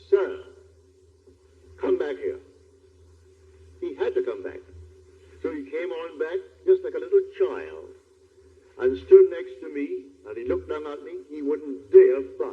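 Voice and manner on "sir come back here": put-on voice calling out. Retelling calling back a man who was buying seats: imitating own full-voiced call. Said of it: "with my full voice".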